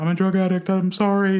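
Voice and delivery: very high, tearful crying scream. Retelling being caught going through someone's medication: retelling own past scream. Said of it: "I remember screaming".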